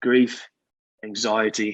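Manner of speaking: slow, fake British accent. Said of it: "British accent and everything".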